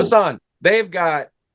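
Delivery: ordinary talk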